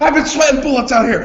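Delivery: very high-pitched, shrill, loud yell. Comparing to a movie scene, yelling at the ref: imitating Ben Stiller's Dodgeball character yelling. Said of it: "Ben Stiller's character from Dodgeball is yelling at the ref".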